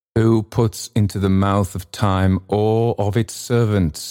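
ordinary delivery, nothing marked

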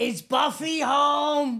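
very high duck-like squawk, drawn-out home. Telling how a neighbor rang the doorbell asking for the pug, imitating the neighbor's voice. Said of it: "he'd go".

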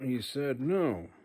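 disappointed, sorry, regretful tone. Doing a numbered series of impressions, the second one: Nick Offerman impression, mock-disappointed. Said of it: "Nick Offerman relaying some disappointing news".

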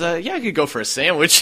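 shy, hesitant, timid, meek, little voice. Imagining answering an angry man's dinner question: pretend timid reply. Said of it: "just timidly raising my hands".

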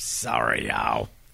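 put-on low, whispered girly voice. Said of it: "try to talk like a girl".

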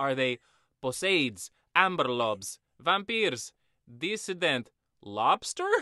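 loud put-on Russian accent on every word. Retelling a zombie story, quoting Juan's line in a Russian accent. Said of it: "Why am I Russian right now?".

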